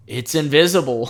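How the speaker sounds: giving-up, resigned tone. Retelling a movie scene, quoting a character's line: imitating a resigned reply. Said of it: "he's resigned".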